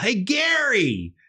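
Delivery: loud, drawn-out parade-ground army yell. Recalling calling down from the stands to gary, retelling a loud army-voice yell. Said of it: "loud army voice".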